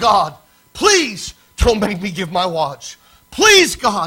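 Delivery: tearful, weeping, begging cry. Retelling a young man crying out loud during the service: imitating a tearful plea to God. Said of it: "this young man's crying out".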